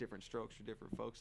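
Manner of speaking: ordinary talk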